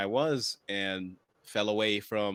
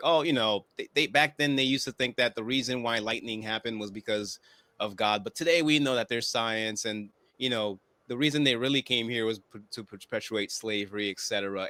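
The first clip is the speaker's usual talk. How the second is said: ordinary talk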